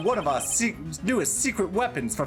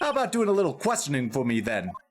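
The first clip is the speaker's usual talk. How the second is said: ordinary delivery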